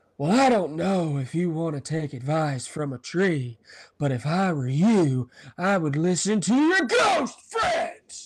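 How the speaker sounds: showy, swooping, animated movie-star voice, wide pitch swings. Doing a quote in impression for the others: Nicolas Cage impression. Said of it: "Howard Wolowitz impersonating Nick Ca-, Nick Cage".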